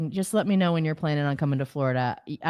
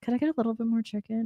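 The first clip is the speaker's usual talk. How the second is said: under the breath, much quieter; 4 semitones higher, 5 dB quieter than usual. Retelling his own habit at the Chipotle counter, muttered under the breath. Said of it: "I say under my breath real low".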